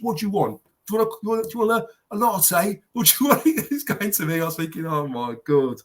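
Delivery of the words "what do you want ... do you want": acted brash, couldn't-care-less voice, pitched high. Retelling how the man serving coffee spoke to him, imitating a brash manner. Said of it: "very, very brash".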